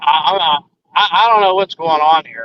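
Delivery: put-on stuttering speech. Retelling the shaken man's words in the parking lot: imitating stuttering speech. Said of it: "He was stuttering while he was talking".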